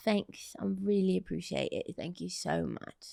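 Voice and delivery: put-on, soft-spoken British accent. Asked to say something else, the speaker answers in a British accent. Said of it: "Say something else".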